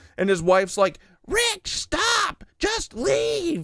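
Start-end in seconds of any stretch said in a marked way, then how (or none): 1.3-3.7 put-on very high, slowly stretched shriek. Retelling a driver's wife shouting at him from the car: imitating wife yelling. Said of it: "yelling at him".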